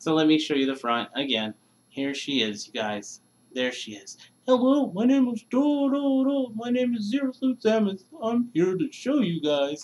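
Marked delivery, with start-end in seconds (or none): 4.5-9.9 very high, squeaky, weird put-on toy voice. Showing an amiibo figure to the viewers, voicing it: weird put-on voice for the figure. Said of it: "Me and my weird voice".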